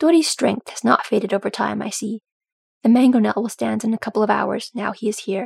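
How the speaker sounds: ordinary delivery, nothing marked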